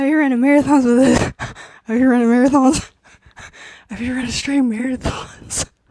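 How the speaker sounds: out of breath. After talking at length to listeners, out of breath. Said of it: "I'm out of breath with it".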